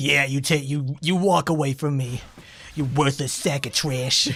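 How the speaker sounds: sneering voice in a different character. Voicing a fighter insulting an opponent who walks away: voicing Obora. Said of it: "you see Obora just go like".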